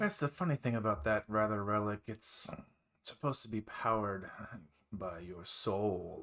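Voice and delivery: derisive, mocking, poking-fun tone. Voicing a character explaining the relic: mocking tone. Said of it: "he kinda says it, like, mockingly".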